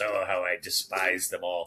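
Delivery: deep pirate captain delivery. Retelling how Hook turned around before his speech: Dustin Hoffman as Captain Hook. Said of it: "he turns around and goes".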